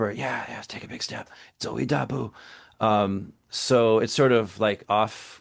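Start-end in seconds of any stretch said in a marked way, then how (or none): 0.1-2.3 soft, hushed half-whisper. Describing clarifying for students in English, the speaker demonstrates a soft half-whisper. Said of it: "I'll kind of whisper".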